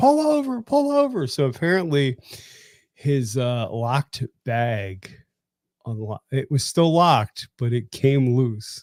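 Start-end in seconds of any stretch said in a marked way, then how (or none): 0.0-1.3 mock very high, urgent, frantic screaming. Retelling seeing a friend's tour pack come loose while riding: retelling a scream. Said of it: "I'm screaming".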